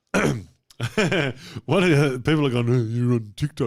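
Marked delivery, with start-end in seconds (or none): 2.7-3.6 wild, daft, mad commenter voice. Imitating people commenting about being on TikTok: imitating a commenter's mad voice. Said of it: "I love this voice, mad voice".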